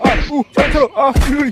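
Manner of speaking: loud cries of pain. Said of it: "ছাড়ো, লাগছে".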